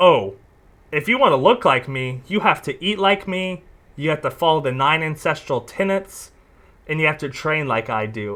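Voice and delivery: ordinary talk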